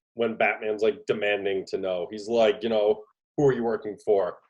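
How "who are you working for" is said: plain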